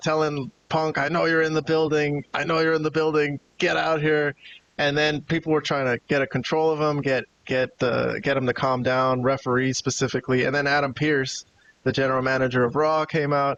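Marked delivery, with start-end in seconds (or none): 1.0-4.3 half-shouted, mild yelled calling out. Retelling someone screaming at the camera at Punk: imitating someone screaming. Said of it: "screaming at the camera".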